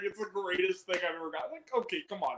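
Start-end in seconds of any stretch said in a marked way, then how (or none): 0.0-1.5 mock overcome, weepy, tearful, gushing sob-talk. Reviewing a movie, the speaker acts out David Harbour's emotional scene: imitating David Harbour crying. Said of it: "like crying".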